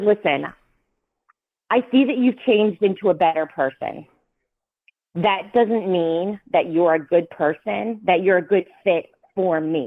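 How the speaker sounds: ordinary talk, nothing marked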